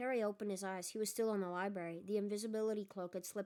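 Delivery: ordinary delivery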